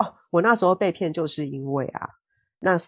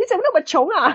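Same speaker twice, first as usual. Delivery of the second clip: put-on scolding in proper standard Beijing Mandarin accent; 14 semitones higher, 5 dB louder than usual. Retelling how a caller scolded them on the phone, mimicking a scolding in beijing accent. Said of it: "非常标准的北京话，好好的责骂了我一番".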